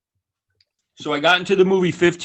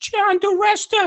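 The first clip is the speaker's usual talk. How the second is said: very high-pitched voice, said slowly. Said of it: "he's got a high-pitched voice".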